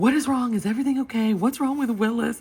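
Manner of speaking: anxious, worried tone, very high-pitched. Retelling a phone call, quoting the worried reply, imitating Russ sounding worried. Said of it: "he is genuinely worried".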